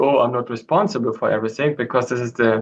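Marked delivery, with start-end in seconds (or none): none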